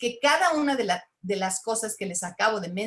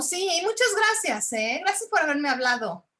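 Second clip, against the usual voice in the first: high, sarcastic, insincere tone; 7 semitones higher than usual. Showing how speaking with sarcasm sounds when thanking someone: sarcastic tone. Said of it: "O cuando hablas con sarcasmo".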